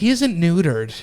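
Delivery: indignant, affronted, offended tone. Retelling what a woman at the dog park said: imitating an indignant Karen. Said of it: "with the fucking half bend Karen fucking face".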